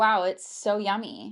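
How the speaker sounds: put-on very slow, flat, unenthused saleswoman monotone. Imitating a woman in a sales video praising a drink: imitating a flat, unexpressive saleswoman. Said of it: "This is my er, interpretation for you".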